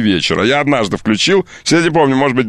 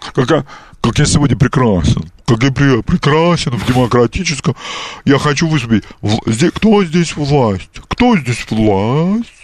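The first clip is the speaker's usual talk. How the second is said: put-on nasal, blocked, stuffy-nose voice. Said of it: "делая заложенный нос, такой он говорит".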